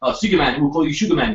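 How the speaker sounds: put-on, half-convincing South African accent. Retelling how people in a film nicknamed a man: South African accent. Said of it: "That's my South African accent".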